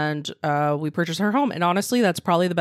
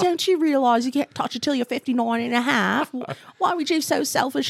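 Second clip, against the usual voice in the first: put-on British accent, pitched up; 8 semitones higher than usual. Imitating people who warn against touching retirement money: put-on british accent. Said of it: "have British accents?".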